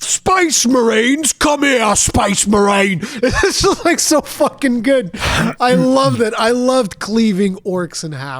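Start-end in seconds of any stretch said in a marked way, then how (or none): 0.0-3.0 put-on orc monster voice with a Cockney accent. Quoting the orc from the game, in a cockney orc voice. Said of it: "The fucking Cockney accent on orcs".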